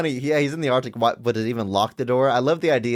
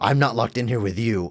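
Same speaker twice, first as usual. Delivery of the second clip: low, gravelly put-on voice. Quoting the first half of a famous movie line: gravelly Rorschach impression. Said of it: "my Rorschach impression".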